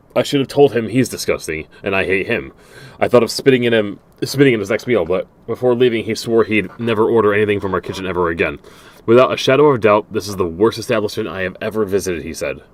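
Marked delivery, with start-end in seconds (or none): none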